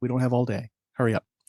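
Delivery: put-on very soft-spoken delivery. Retelling a sergeant hurrying two soldiers along: imitating someone speaking very softly. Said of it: "very softly".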